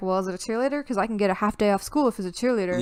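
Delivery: plain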